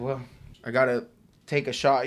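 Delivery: ordinary talk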